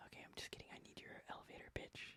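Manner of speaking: in a whisper. Joking with a guest before a timed intro, asking for an elevator pitch, whispering. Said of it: "Why are we whispering?".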